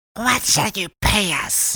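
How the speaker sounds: sharp, high, sibilant hiss. A woman answers an offer to pay for the child's offenses, hissed. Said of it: "she hissed".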